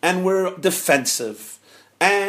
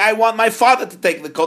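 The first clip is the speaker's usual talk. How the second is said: mock loud, raised, insistent screaming; 5 semitones higher, 6 dB louder than usual. Telling a story where a son argues over a coat: acting out a scream. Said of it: "The son is screaming".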